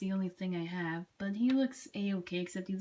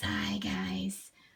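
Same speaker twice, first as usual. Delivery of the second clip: demonic monster voice. Showing a made-up voice for a Burning Godzilla figure: demonic voice for Godzilla figure. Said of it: "That's his, uh, demonic kind of voice".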